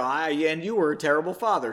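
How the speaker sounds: usual speaking voice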